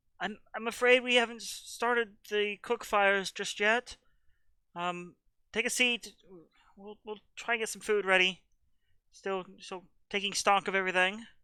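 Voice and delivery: small, squeaky, tiny, very high voice. Narrating a game, answering players who come in for food, tiny little voice. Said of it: "a tiny little voice".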